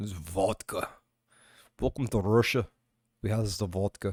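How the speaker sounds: awful, bad, put-on fake Russian accent. Speaker, who says he is no actor, tries out an accent: bad russian accent. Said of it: "I know they all sound Russian".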